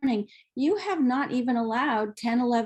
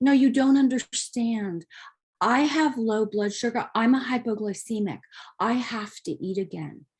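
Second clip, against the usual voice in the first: tongue-in-cheek, mildly sarcastic, insistent tone. Imitating a patient who insists they must eat again: imitating a patient sarcastically. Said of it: "I'm saying that a little sarcastically".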